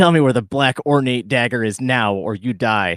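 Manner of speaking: loud, menacing, as intimidating as possible. Holding a dagger to a captive's throat and demanding answers: as intimidating as possible. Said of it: "with all the intimidation I can muster".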